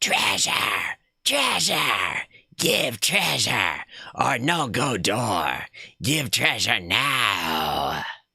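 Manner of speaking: hoarse, rasping rat creature voice, drawn out. Narrating a game scene, voicing the rat as it speaks: raspy rat voice. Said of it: "The rat rasps".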